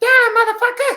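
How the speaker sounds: very high, squeaky, tiny recorded-sounding voice. In a tabletop game, voicing a recorded message coming from the eggs, tiny recorded voice. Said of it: "you hear a little voice coming from a recorded message".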